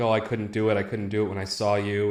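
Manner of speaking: put-on, tearful crying voice. Retelling a film scene to a friend, imitating someone crying. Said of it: "crying, like".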